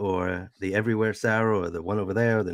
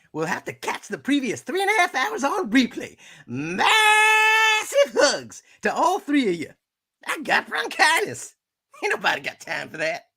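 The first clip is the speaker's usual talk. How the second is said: very high put-on voice, swooping up and down. Streamer reading a viewer's message aloud, Sweet Brown voice. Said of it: "we'll do this in the sweet brown voice".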